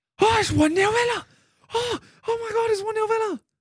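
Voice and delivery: very high, rattled, panicked squealing voice.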